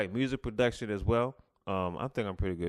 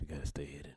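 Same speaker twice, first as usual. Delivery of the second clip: put-on eerie, sinister, creepy voice; 5 semitones lower, 10 dB quieter than usual. Answering a question about what hidden talent they have: put-on creepy voice. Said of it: "You said that creepy voice".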